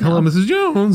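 put-on high, squeaky, cracking adolescent boy voice. Retelling a confused teenage store worker greeting a customer; imitating a cracking teen voice. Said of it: "His voice is crackling".

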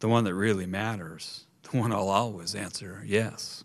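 ordinary delivery

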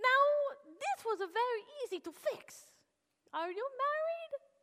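put-on Russian-accented male speech. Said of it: "this Russian man, Vladimir".

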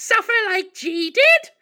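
very shrill, very loud, weird squeaky monster voice. Retelling how a movie monster flies up at the screen, in a weird squeaky voice. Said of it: "with this weird squeaky voice just goes".

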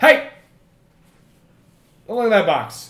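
high, barked shout from out of sight. Narrator voices a command shouted as the players look into a box: shouted command. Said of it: "that command is shouted out".

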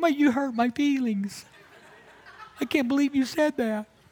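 put-on very high, childlike little kid voice. Explaining how being hurt feels inside, speaking as a little kid: little kid voice. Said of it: "it's like a little kid going".

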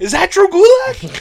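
shrill, booming, very high, loud, slow and drawn out. Retelling a wrestling commentator's catchphrase: Pat McAfee impression. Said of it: "you hear Pat McAfee go".

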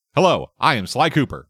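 wooden, flat line reading. Mocking a game's voice acting, quoting the hero Sly Cooper in a wooden delivery. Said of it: "the voice actor was so wooden".

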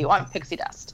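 ordinary talk

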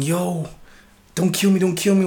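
acted-out, imploring, pleading, begging voice. Retelling how a man thrown off his bike begged his attackers, imitating someone pleading. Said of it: "Dude was pleading".

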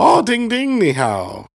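put-on very high, swooping old grandpa voice. Speaker repeats the grandpa's usual greeting, imitating grandpa's old man voice. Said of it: "has that old man voice".

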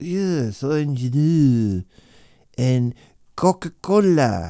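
imitated Scottish voice. Retelling a Scottish shopkeeper listing drinks: imitating a Scottish shopkeeper. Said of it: "he was Scottish".

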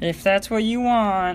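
high-pitched, slow mom voice. Retelling mom's reply when picking out glasses, Kermit voice for mom. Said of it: "Why is that your voice for, like, moms and parents".

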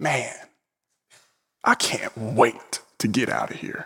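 put-on male mutter under breath. Retelling what a man nearby said as people walked past, imitating a man's muttering. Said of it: "I hear him kind of mutter under his breath with this deep look of longing".

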